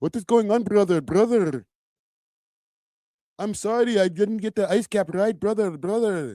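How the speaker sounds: over-the-top put-on Indian accent, spoof-style. Showing how a skit would go, in an Indian accent. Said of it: "I'm doing the Indian accent".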